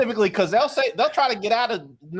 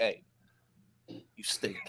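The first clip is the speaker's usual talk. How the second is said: breathy whisper, close in; 10 semitones lower, 14 dB quieter than usual. Showing how to warn someone politely one time: whispering. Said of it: "You whisper to 'em".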